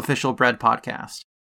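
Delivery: ordinary talk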